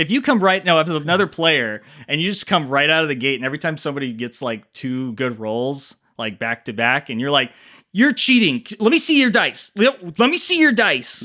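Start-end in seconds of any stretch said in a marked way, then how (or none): 7.9-11.3 mock accusing tone like a teenager, high, loud. Acting out an accusation of cheating at the game table: imitating a younger accusing self. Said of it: "you literally sounded like you were fifteen years younger".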